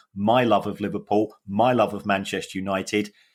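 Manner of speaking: plain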